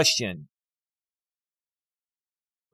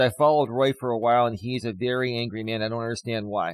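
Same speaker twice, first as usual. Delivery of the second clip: normal talking voice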